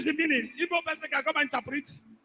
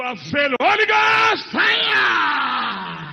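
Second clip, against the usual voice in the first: very slow, drawn-out, booming, swooping shout; 7 dB louder than usual. Declaring that attackers of a coming program have failed: shouting. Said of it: "Can you stop shouting".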